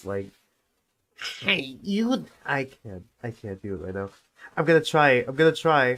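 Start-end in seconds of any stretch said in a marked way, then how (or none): 1.4-2.3 put-on old lady voice. Trying out a character's first line in an old lady voice. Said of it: "how I used to do the old lady voice".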